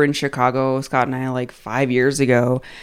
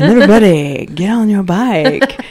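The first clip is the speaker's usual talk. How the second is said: close-mic, high, loud, hyped fancy-club instructor voice; 5 semitones higher, 7 dB louder than usual. Describing an exercise class, imitating how the instructors talk into the microphone. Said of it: "they talk like this".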